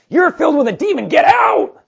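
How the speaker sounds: piercing, very high, very loud, shrill scream. Retelling a story, acting out a man screaming at a young woman following him. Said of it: "screams at her and goes".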